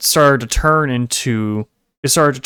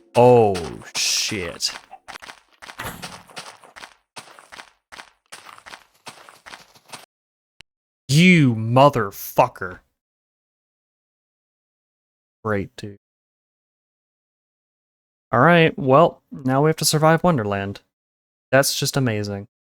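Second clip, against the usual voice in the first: fed-up, irritated, exasperated, annoyed outburst. Playing a game after a creature vanishes behind a tree, annoyed. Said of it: "You can hear it in my voice here that I'm getting pretty annoyed".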